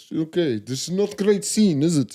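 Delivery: slow, drawn-out put-on Russian accent. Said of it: "Was he Russian?".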